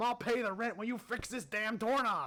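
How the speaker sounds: high-pitched, fed-up, exasperated yell. Acting out an imagined scene where a man knocks at a door: imitating Jeff Bezos yelling. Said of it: "Jeff turns around and yells at him".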